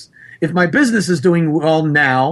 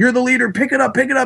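put-on high, screaming coach voice; 8 semitones higher than usual. Retelling how a coach screamed at his quarterback: imitating a coach screaming. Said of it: "kept screaming at Bart Starr".

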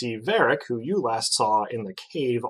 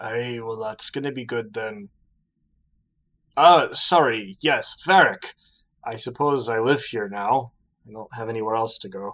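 put-on drunk character voice. Voicing Varric, who gets a faraway look at mention of Fury, drunk. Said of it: "And you turn around to see [name], / but has certainly had some drinks. / lass? ... son".

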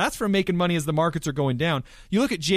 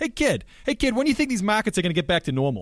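put-on thick New England accent, laid on heavy; 4 semitones higher than usual. Remembering what Neil, who always called him kid, used to ask: Neil's heavy New England accent. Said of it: "he had the heavy New England accent. I always try to pull it off".

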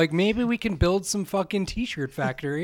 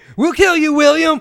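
put-on very loud, wrong-sounding, botched Boston tough-guy accent; 9 semitones higher, 11 dB louder than usual. Acting out a Boston mob threatening an abolitionist, botched Boston mob accent. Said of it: "I did totally wrong fucking accent there".

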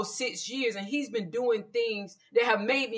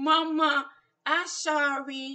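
put-on baby-talk voice with sorry drawn out; 4 semitones higher than usual. Imitating him apologizing after doing something wrong: childish baby voice. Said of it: "he's using a baby voice when he's done something wrong. Like, is he saying, ... like that?".

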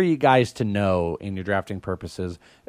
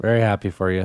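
joyless, unhappy-sounding tone. Reacting to another speaker's draft pick, not sounding happy. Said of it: "Don't sound like you're happy".

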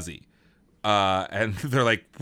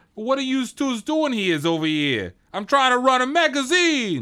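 put-on heavy New York accent, pitched very high; 12 semitones higher, 3 dB louder than usual. Play the magazine's CEO confronting two detectives, in the most New York accent ever. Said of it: "the fucking most New York fucking accent ever".

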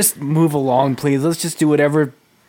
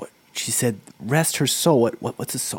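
hushed whisper, much quieter, lower; 4 semitones lower, 7 dB quieter than usual. In a narrated scene, a character whispers a question to companions; whispering. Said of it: "Thrale whispers".

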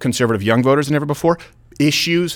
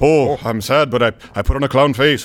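manic put-on comedian voice. Joking about Fern Gully after Robin Williams is mentioned: Robin Williams voice. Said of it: "where Robin Williams also did another voiceover".

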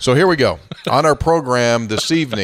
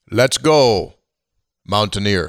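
put-on accent, Jamaican-sounding; 2 semitones lower than usual. Recalling a halftime announcement line, doing a bad James Earl Jones impression. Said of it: "He's not from Jamaica. What accent are you doing?".

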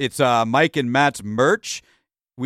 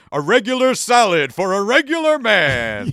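booming, loud, slow, drawn-out proclaiming delivery; 6 semitones higher than usual. Reading a skit aloud, Clark Kent ordering from the waiter: said loudly. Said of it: "And Clark Kent loudly says".

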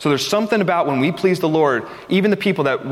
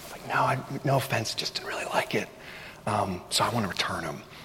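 put-on whisper, quieter and lower; 6 semitones lower, 11 dB quieter than usual. Speaker retells answering a woman while returning pillows, retelling own whisper. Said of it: "and I'm whispering".

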